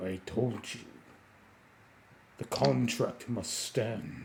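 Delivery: very quiet, deep, hushed, mysterious voice. Narrating a story where a book starts talking, in a big mysterious voice. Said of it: "in a big, mysterious voice".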